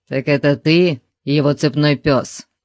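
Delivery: grumbled, grousing tone. A man answers a giant who has just named himself, grumbling. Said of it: "проворчал Конан".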